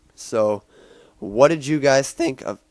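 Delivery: voice cracking high and loud. Asking viewers what they thought of a movie, voice cracking. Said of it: "Oh my God, my voice cracked".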